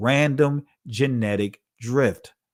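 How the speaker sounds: slow reading aloud. Reading a definition aloud so listeners can follow, reading slowly. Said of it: "I'm gonna read it slowly".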